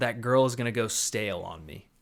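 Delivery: plain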